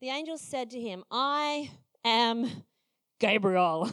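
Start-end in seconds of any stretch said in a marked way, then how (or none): 1.1-3.9 loud, booming, big delivery. Retelling a scripture scene, voicing the angel Gabriel. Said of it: "That's how I imagine he said it".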